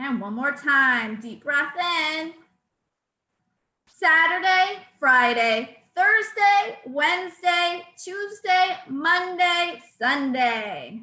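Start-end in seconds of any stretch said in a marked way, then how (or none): 3.9-11.0 loud voice projected to the back of the room. Leading a breathing exercise, saying the days aloud: loud projected voice. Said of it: "your loud voice that we're projecting across the room".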